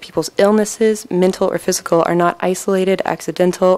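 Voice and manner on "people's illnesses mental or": ordinary delivery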